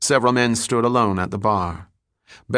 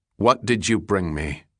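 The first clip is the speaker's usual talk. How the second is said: ordinary delivery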